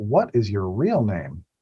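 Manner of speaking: mock, snide, sarcastic, swooping tone. Reading a case question aloud to a class: sarcastic. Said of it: "I should have read that less sarcastically".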